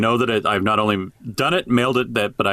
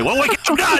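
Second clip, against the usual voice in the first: put-on fatherly dad-style tone. The speaker addresses Tiffany in a put-on dad voice. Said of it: "my dad voice is about to come on".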